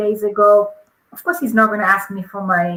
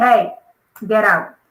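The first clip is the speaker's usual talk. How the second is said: mock sour, bitter delivery. Retelling a stop by police on the highway: imitating bitter police officer. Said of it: "the police guys were so bitter".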